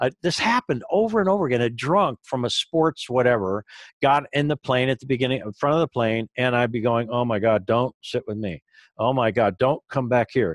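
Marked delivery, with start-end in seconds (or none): 7.1-10.6 scared, desperate, terrified pleading. Retelling silently begging a passenger not to sit nearby: imitating own terrified pleading. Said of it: "I would just be terrified".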